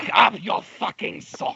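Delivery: high-pitched, rough, raspy character voice. Showing a voice impersonation tutorial, yelling at Sans: Papyrus voice. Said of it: "this hurts so badly".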